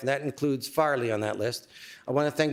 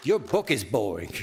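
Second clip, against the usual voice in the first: low, put-on New York accent; 4 semitones lower than usual. Retelling a remark she made to him, imitating her New York accent. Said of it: "with a New York accent".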